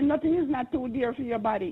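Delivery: ordinary delivery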